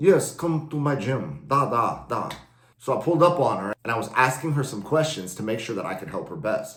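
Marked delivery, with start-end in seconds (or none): 0.0-2.3 put-on Russian accent, very slow and drawn out. Retelling what a rival gym owner asked: Russian accent. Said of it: "she had a Russian accent".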